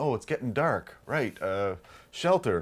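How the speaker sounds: ordinary delivery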